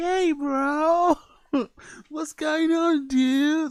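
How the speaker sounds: very high, very slow laid-back surfer-dude drawl. Speaker showing the voice he always tries to sound like: surfer-dude voice. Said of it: "I'm always trying to sound like".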